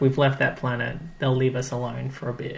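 ordinary talk, nothing marked

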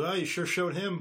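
slow, mocking, scoffing sarcasm. Voicing a character who scoffs at a warlock: scoffing. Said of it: "Jerem scoffs at the warlock and goes".

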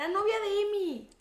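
very high, put-on shouted yell. Recounting a woman who shouted to the speaker by the wrong name, retelling a shout. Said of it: "y me gritó".

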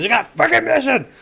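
very high, ragged, rough all-out scream. Voicing the captain announcing to the crew: captain screaming. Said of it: "and he just screams".

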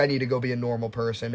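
ordinary delivery

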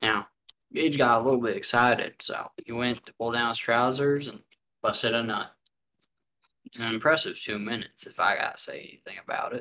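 nature documentary narrator voice. Imagining a famous narrator describing the speaker's life: Morgan Freeman impression. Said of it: "he'd be like".

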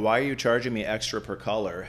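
ordinary talk, nothing marked

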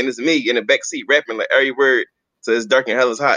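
plain

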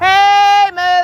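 high-pitched loud hollering. Calling out to someone nearby to stay away, yelling. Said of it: "I'm gonna yell again".

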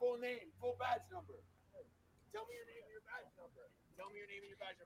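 frantic screaming, very high. Demanding a name and badge number: screaming. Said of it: "jumping around screaming".

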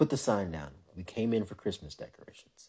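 quiet, fatherly scolding dad voice. Recounting what they told the girls fighting over a sign, retelling in dad voice. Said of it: "dad voice is coming out".

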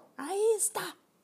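very high, triumphant shout. Reading a novel aloud, voicing the headmistress before a class, shouted triumphantly. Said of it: "A taurina gritou triunfante".

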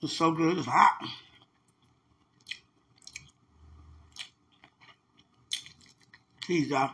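talking with mouth full while eating. Talking to someone while eating spicy food: eating while talking. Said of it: "I'm all smacking in your ear".

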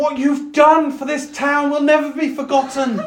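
very high, carrying shout. Retelling a woman calling out to the group from fifty feet away, retelling a shout. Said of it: "she's shouting across like uh, 50 feet".

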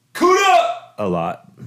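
very high, loud belted yell. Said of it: "I got to yell".

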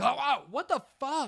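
put-on sudden, very high startled yelp. Telling how a companion walking behind suddenly screamed, imitating Dave's yelp. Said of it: "I hear him sc- like yell, like scream, like yelp".

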